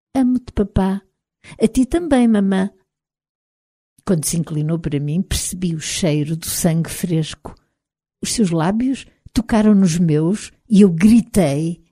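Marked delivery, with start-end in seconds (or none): 0.2-1.1 soft sensual voice, higher pitch. A woman speaks again in front of Ismael, soft, sensual, like Briana. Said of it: "tom suave e sensual".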